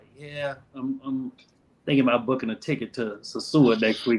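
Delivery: hushed, very quiet, understated. Retelling what was said to his girl about a trip: real quiet. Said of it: "I said it real quiet".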